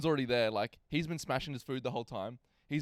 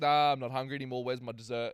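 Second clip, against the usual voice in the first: ordinary talk, nothing marked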